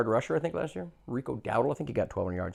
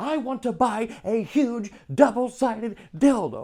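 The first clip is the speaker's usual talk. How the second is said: mock shrill scream, very high, very slow, drawn out; 9 semitones higher than usual. Retelling a comedian's stage bit for phone ads: imitating a comedian screaming. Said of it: "He just keeps screaming it".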